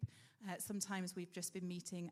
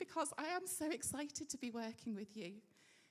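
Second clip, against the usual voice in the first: tearful, pitched-up crying through the words; 5 semitones higher than usual. Welcoming a group they're so excited to work with, crying. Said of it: "I don't know why I'm crying".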